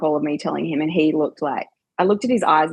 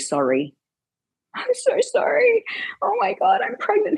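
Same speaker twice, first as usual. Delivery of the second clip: high, swooping, sobbing, bawling through tears. Retelling a phone call announcing her pregnancy, imitating tearful bawling. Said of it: "bawling my eyes out".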